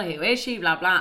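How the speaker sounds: plain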